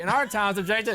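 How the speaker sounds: forced, stiff, robotic text-to-speech delivery. Retelling how the host repeated his lines: imitating a robotic host. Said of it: "repeat things over and over again".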